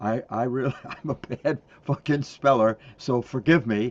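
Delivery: loud, play-acted delivery said through laughter. Retelling an apology once made while writing on a board: imitating own past laughing remark. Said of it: "and I'm laughing. I'm going".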